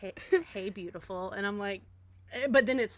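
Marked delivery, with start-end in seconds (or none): 0.0-1.3 flirty guy's come-on voice. Retelling a video where a guy greets the viewer, imitating a flirty guy's voice. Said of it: "Oh, the voice".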